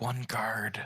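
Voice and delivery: very quiet hushed whisper. Playing Chin, who gets back up and signals about a guard, in very hushed tones. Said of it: "in very hushed tones of like".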